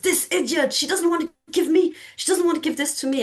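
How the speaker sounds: play-acted, very high-pitched, shrill complaining yell. Retelling a man's outburst at a colleague, imitating a man yelling. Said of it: "he's yelling at um, one of my colleagues".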